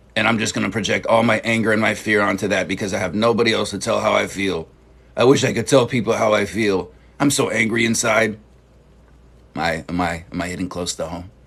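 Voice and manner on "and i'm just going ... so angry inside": ordinary delivery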